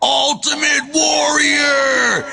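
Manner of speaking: long, high, drawn-out yelling war cry.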